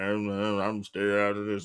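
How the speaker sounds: low-pitched voice.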